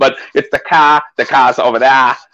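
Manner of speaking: poor put-on Massachusetts accent. Trying out the other speaker's accent, admitting it slips: bad Massachusetts accent. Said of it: "that's the Massachusetts accent".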